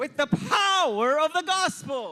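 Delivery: impassioned preaching yell. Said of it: "I'm up here yelling at you".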